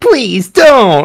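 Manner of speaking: snide, high, mocking tone. Reading a scene aloud, a speaker mimics her twice in a row: mocking imitation of her. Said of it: "I have to mock her twice".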